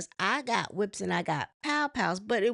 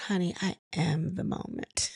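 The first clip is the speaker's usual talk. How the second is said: put-on nice, calm tone, lower pitch; 4 semitones lower, 4 dB quieter than usual. Retelling a reality show argument, quoting a cast member: imitating Kenya's nice calm tone. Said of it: "just so nice and calm".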